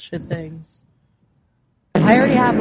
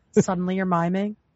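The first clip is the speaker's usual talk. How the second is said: usual speaking voice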